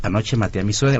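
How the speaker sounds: ordinary delivery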